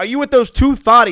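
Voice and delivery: shrill, full-throated, very loud, high-pitched yelling. Retelling how he yelled at the speaker in front of two girls, imitating someone yelling. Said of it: "and he's yelling at me".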